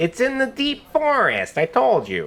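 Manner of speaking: very high, swooping, shady gnome voice. In a tabletop game, answering the players' question as a shady gnome. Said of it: "So you've made a deal with a shady gnome in the alley, / He just like catches the coin again".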